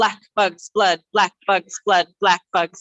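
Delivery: energetic, loud, punchy tongue-twister-style drill. Leading a tongue-twister warm-up, repeating it three times: very fast. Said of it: "Three times real fast".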